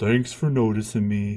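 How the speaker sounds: put-on gloomy donkey voice. Voicing a dog named Gunther who is like Eeyore: Eeyore voice for dog. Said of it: "So that's his voice".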